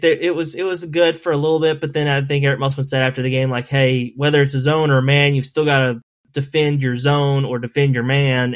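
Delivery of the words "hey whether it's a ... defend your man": plain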